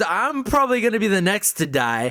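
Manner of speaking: ordinary talk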